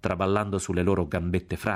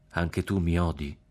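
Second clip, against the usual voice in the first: usual speaking voice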